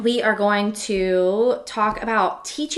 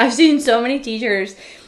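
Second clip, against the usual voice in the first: loud talk with laughter through the words. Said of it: "I'm sorry that I'm laughing".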